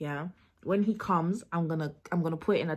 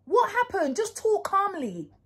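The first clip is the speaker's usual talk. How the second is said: high, loud, put-on argumentative shouting. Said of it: "act like I'm having an argument".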